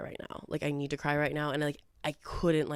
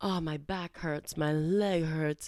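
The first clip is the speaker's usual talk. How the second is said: mock whiny, complaining sob-story tone. Retelling a date's constant complaints: imitating whiny complaining. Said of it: "a sob story with him".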